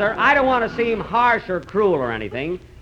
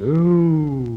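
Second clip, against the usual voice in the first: put-on whale sound; 5 semitones lower than usual. Introducing the largest whale in a story preview, the announcer gives a Monstro whale imitation. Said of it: "That's an imitation of a whale".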